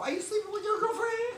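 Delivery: high, put-on Vietnamese accent. Speaker acts out confronting a non-believer as an illustration: vietnamese accent impersonation. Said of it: "That's my Vietnamese impersonation".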